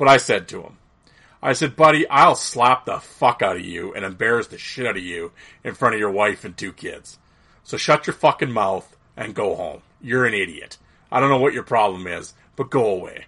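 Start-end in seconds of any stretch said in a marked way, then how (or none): 1.8-13.3 even, unraised, irritated level talking voice, acted. Retelling an irritated warning to a man in a mall: retelling an irritated line without yelling. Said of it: "I wasn't yelling. I was just talking like this".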